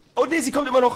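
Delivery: high, loud, panicked alarmed shout.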